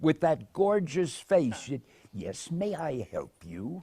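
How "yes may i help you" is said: put-on refined, soft, polite English accent. Recalling meeting an english woman, quoting her words: imitating her english accent. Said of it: "in that English voice".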